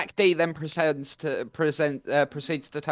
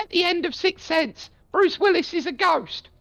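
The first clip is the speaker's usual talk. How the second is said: put-on little old granny voice, very high. Retelling a man's joke where he answers himself, old granny voice. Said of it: "answers in an old granny voice".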